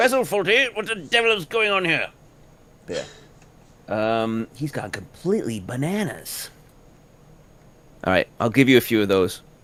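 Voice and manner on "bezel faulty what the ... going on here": sketch-style voice, pitch way up. Trying out a line that sounds like someone: John Cleese voice. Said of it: "that sounds like John Cleese".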